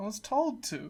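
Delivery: quiet, beaten, deflated, defeated tone. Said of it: "The defeat in [name]'s voice".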